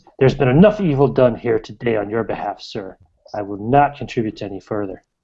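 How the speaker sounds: reproachful, disapproving, scolding tone. Voicing the priest who stands over a player: reproachful, like a scolding teacher. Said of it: "a reproachful teacher or father".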